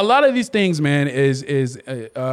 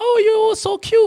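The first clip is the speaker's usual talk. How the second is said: put-on baby-talk voice, raised pitch. Showing how people talk to babies: imitating baby talk. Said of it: "you talk to them like a baby".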